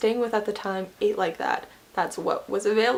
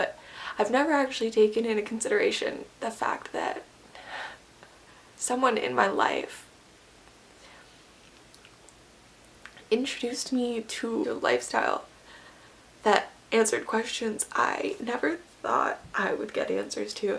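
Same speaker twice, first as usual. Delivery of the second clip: emotional voice catching and choking up; 4 dB quieter than usual. Talking to viewers about a personal struggle: emotional. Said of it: "I'm sorry I'm getting emotional".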